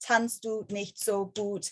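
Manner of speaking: slow, flat alien monotone.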